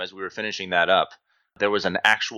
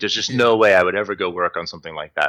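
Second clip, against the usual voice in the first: airy, scornful, really dismissive, acted-out throwaway. Retelling a reply to someone asking where to work next: imitating own dismissive tone. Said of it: "in this, like, really dismissive way".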